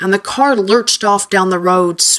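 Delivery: ordinary delivery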